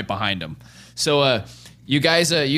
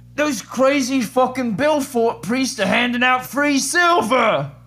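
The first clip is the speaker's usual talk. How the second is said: very high, shrill, cupped-hands shout; 10 semitones higher than usual. A man bursts in through the doors while the group talks, shouting. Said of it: "he shouts".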